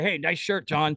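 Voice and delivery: put-on lazy, sluggish commentator voice. Retelling a puppet bit that mocks commenters: imitating the S J puppet. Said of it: "a Stuttering John commenter, and he's like".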